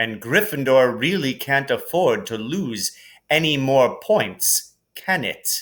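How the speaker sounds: plain reading voice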